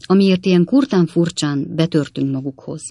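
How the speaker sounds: usual speaking voice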